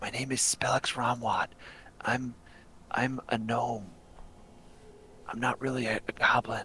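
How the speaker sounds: very quiet, hushed whisper. A game character dropping his disguise to reveal who he is, whispering. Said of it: "he gets real quiet and he starts whispering".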